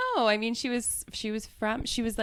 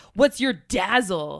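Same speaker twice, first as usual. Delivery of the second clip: hard, threatening tough-guy voice; 9 dB louder than usual. Recounting a scene where Mondo questions a newcomer, imitating Mondo's tough voice. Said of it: "he asks Skin in like such a tough voice".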